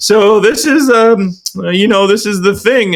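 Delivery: stiff, read-aloud delivery. Describing people making videos for others, imitating their mock stiff scripted reading. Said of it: "you can tell they're like almost reading it".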